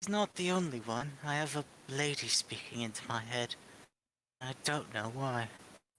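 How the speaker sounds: put-on gradually drifting into an English accent. Playing a character in a group game, speaking in an english accent. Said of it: "your southern accent has gone very English".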